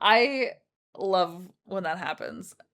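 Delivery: sarcastic, ironic praise, meaning the opposite. Talking about having deleted custom content, sarcastic.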